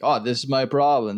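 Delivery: ordinary talk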